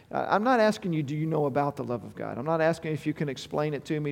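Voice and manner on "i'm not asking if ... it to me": ordinary talk, nothing marked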